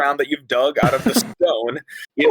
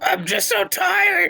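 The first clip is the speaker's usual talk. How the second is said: very high, rough, creaky, exhausted imp voice. Voicing the blue imp when called on for its turn: exhausted imp voice. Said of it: "the exhausted blue imp".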